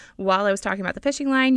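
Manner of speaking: fast, hurried, rushed narration.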